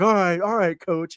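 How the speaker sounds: mock needling, mocking, teasing tone. Retelling how the coach answered a benched player: imitating Cal mocking a player. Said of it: "he was mocking the kid".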